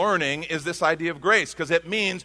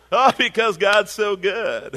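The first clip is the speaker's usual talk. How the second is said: slow, put-on Southern drawl. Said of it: "Why are you Southern?".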